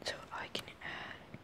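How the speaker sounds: soft, voiceless whisper.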